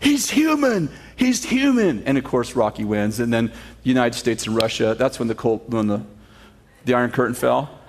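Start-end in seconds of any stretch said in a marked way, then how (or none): 0.0-2.0 acted-out yelling, much higher-pitched and slower. Retelling the Rocky movie, the manager yelling when his fighter gets hurt, retelling a yell. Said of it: "his manager starts yelling".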